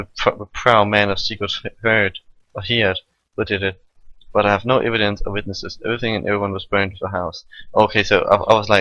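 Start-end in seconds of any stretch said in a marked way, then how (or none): none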